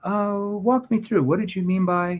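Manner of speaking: genuinely curious, inquiring tone. Speaker demonstrates how tone changes the way a question comes across; curious tone. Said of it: "more curious".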